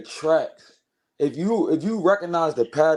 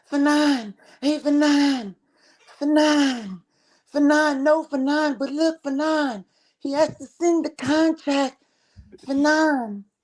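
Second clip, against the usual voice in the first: put-on squeaky, very high young man voice, nine drawn out; 11 semitones higher than usual. Speaker mocks how Haney fans talk, in a soft-voiced fan impression. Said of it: "chubby little young dudes with soft voices".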